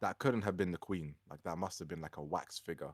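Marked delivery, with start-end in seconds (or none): none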